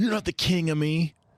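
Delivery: put-on high, loud, juvenile, childish screeching scream. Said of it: "he's screaming at first at his mom".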